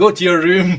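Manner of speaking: high, loud telling-off tone.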